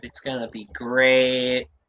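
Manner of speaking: sarcastic, mock enthusiasm. Joking about leaked cards after others thank for leaks: sarcastic. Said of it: "This is sarcasm".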